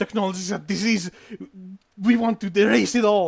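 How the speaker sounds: worried and concerned. A man in the Quiet Dawn camp answers why he is here, very worried and concerned. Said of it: "he says um very worried and concerned".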